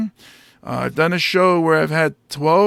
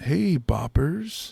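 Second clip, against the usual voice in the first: smooth radio dj voice, quieter; 5 dB quieter than usual. Friends joking about radio voices, one does the smooth jazz DJ from The Warriors. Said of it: "I wish I had like that smooth jazz".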